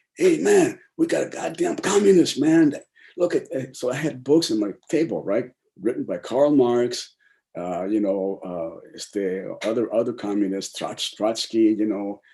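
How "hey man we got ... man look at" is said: shouting, higher and louder. Retelling a cop finding books in the kitchen: imitating a cop yelling. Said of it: "he yells out".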